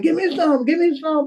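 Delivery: mock, high-pitched, repeated hollering. Retelling stealing from a hot pan, imitating him hollering for some. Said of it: "He started hollering".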